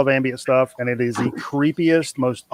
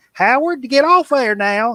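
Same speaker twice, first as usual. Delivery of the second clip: put-on hollering, much higher; 10 semitones higher than usual. Telling a story about a kid named howard, speaker imitates his mama: imitating a mama hollering. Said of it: "You hear his mama hollering like".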